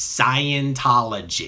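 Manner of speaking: ridiculously overemphasized, hammered stress on "Scientology". Imitating how people say the word ridiculously: overemphasized 'Scientology'. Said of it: "people usually overemphasize the word Scientology in a way that makes them sound ridiculous".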